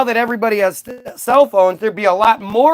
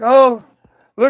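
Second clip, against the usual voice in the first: put-on weeping, tearful crying words; 3 semitones higher than usual. Retelling a video of a father at an accident: imitating a man crying.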